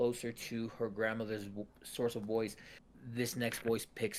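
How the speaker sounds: ordinary delivery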